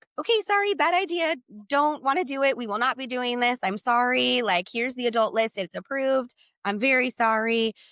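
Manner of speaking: mock flustered, shrinking-back, apologetic tone. Recounting backing down after an intense man went off on them, retelling a recoiling apology. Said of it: "And I like recoil".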